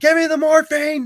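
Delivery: pained, desperate, shrill scream, very high and loud. Recounting being in the ER with kidney stones, retelling a scream. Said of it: "screaming at the top of my lungs".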